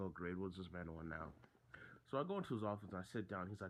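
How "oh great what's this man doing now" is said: plain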